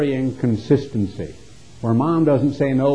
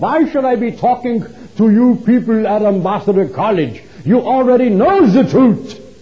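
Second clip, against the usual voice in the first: put-on heavy German accent, laid on thick and loud; 8 semitones higher, 6 dB louder than usual. Retelling a German author's talk from the podium at Ambassador College, in a thick German accent. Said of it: "in his thick German accent".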